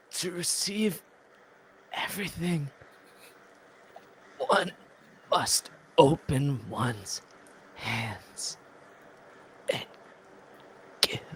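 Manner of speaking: very slow, halting dying whisper in broken phrases. Reading the bottle quote again as last words: dying on deathbed. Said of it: "this is me on my deathbed".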